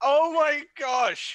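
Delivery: shrill, very high, very loud scream. Reacting as a man reports finding dead bodies, screaming into the heavens. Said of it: "I scream into the heavens".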